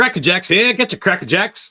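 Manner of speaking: very loud, very high, booming, shrill vendor holler. Demonstrating how a Cracker Jacks seller calls out, in a super loud vendor call. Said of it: "That was super loud".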